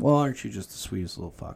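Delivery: ordinary talk, nothing marked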